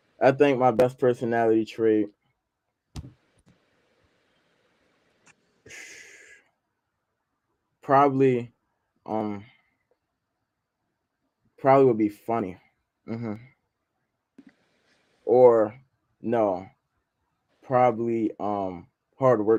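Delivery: very slow, drawn-out speech. Answering what your best personality trait is, talking very slowly. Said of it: "Why are you talking so slow?".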